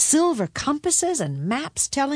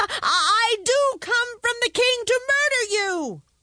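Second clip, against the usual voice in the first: put-out, peeved, irritated, annoyed; 13 semitones higher than usual. The cobbler's son answers the dragon, annoyed. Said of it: "The cobbler's son was annoyed".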